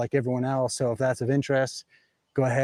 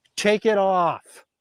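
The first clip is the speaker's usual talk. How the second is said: play-acted, loud, high-pitched aggressive yelling; 7 semitones higher, 5 dB louder than usual. Retelling a stranger yelling while shopping down an aisle, imitating someone yelling aggressively. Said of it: "I hear someone yell".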